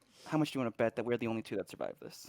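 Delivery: hushed whispered aside. At the back of the group, a character whispers to a companion: whispering. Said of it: "I'm gonna whisper to him".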